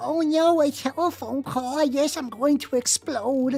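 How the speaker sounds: mock anxious, panicky voice. Mocking VTubers who dread making a telephone call: mocking a phone-anxious VTuber. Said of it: "one of those VTubers that's like".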